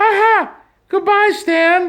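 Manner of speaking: voice pitched way up and loud. Saying goodbye the way Mickey would in Disneyland: Mickey Mouse voice. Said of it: "or as Mickey, you would say".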